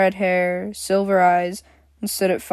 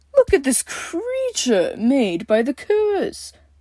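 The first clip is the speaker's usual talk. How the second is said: fake scared, high swooping voice; 7 semitones higher than usual. The Supreme Leader speaks about a girl sentenced to die, in a fake scared voice. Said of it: "he said in a fake scared voice".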